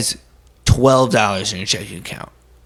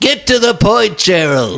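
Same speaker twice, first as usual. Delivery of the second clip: yelling, higher and louder; 9 semitones higher, 5 dB louder than usual. Interrupting the boss who keeps hesitating: raised voice. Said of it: "you just, uh, raised your voice at me".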